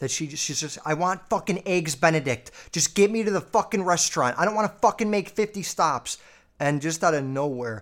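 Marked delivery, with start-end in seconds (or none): 0.8-6.2 mock angry, high, furious screaming rant. Retelling how mom suddenly started screaming in the car: imitating mom screaming. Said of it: "my mom just starts fucking screaming".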